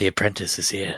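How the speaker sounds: whispering. Whispering in Skaya's ear to wake her for watch: whispering in someone's ear. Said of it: "I'll whisper in Skaya's ear".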